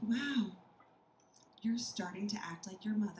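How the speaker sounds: acted-out sad tone. Retelling what the husband said to her: imitating husband's deep sadness. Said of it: "he looks at me with such deep sadness".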